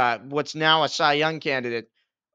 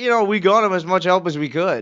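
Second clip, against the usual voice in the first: loud, joking, sarcastic, messing-around delivery; 4 semitones higher, 5 dB louder than usual. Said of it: "he's screwing around".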